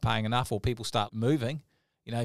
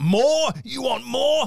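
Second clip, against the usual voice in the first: mock outraged disbelief, very high, shrill and drawn out; 13 semitones higher, 7 dB louder than usual. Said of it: "he's just outraged".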